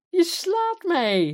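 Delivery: very high, overjoyed, elated cry. Queen Isabel, just slapped by the king, cries out to him: elated cry. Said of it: "riep ze opgetogen".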